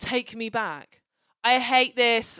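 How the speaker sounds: very loud, unhinged, crying, sobbing scream. Recapping a TV scene, the speaker acts out a crying woman, retelling a scream.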